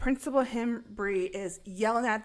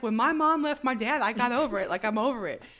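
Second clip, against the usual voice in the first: ordinary talk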